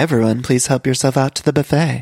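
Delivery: very subdued, restrained, muted, low-key voice. Imitating a cast member's new voice at a party: imitating a subdued voice. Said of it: "a very subdued".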